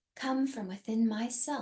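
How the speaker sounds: whispered. Repeating an affirmation after the other speaker, in a whisper. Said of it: "And now in a whisper".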